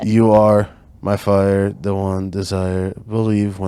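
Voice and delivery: put-on flat monotone. Reading an example line to the group, do a Marco monotone impression. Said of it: "I'm gonna try to do a Marco monotone".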